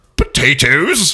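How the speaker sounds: slow, drawn-out, sneering villain British accent. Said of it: "I'm a villain British guy".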